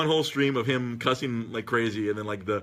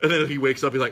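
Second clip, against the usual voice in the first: ordinary talk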